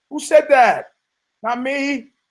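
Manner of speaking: high, loud, indignant, outraged outburst. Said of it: "I go".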